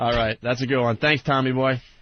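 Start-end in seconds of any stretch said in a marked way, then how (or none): none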